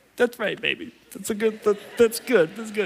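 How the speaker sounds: tearful weeping, crying through the words. Retelling a reply to his daughters' giving, crying while talking. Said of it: "I'm crying right now".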